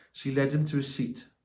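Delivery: ordinary delivery, nothing marked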